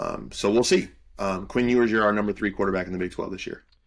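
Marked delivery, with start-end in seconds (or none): 1.9-3.6 fast, rattled-off delivery. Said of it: "I'm talking fast and spitting facts".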